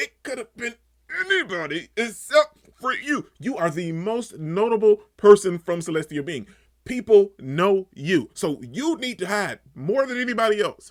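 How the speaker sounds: high, exasperated, fed-up, frustrated yelling. Venting frustration while discussing an episode, yelling. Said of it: "I'm sorry that I'm yelling".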